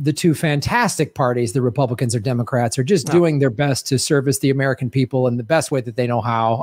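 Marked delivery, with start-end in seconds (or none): none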